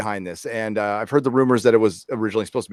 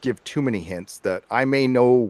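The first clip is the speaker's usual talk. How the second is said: plain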